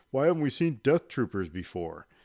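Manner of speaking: dopey, goofy, mocking dumb voice, swooping. Speaker imitating that person after first seeing Rogue One, dumb mocking voice. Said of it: "by using that dumb voice".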